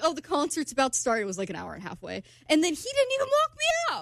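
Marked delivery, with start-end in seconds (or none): none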